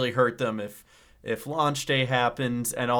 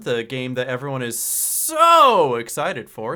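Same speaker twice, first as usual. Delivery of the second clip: dry, mocking, loud sarcastic tone with swooping pitch; 6 dB louder than usual. Asking the other speaker about a game: sarcastic. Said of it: "Sorry about the sarcasm".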